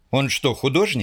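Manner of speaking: usual speaking voice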